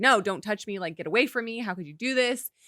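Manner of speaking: put-on panicked, freaking-out voice. Recounting a film scene, imitating a character freaking out. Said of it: "So she's freaking out".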